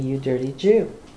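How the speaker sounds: ordinary talk, nothing marked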